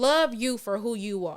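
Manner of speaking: plain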